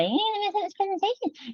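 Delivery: silly put-on voice, very high-pitched and fast. Showing how to take power from an unhelpful thought: stupid voice. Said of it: "say it in a stupid voice".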